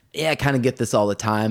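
ordinary talk, nothing marked

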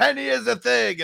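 shouted all-caps yell, very high and rough. Showing how the written message reads, reading it in all caps. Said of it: "In all caps".

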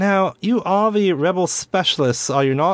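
high, crisp, official-sounding woman's voice.

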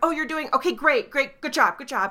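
frazzled, high, loud, frantic panicked screaming. Retelling how the manager praised staff across the restaurant: imitating someone screaming. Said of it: "screaming more".

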